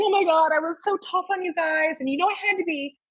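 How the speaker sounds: high, apologetic, remorseful voice. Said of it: "She's like".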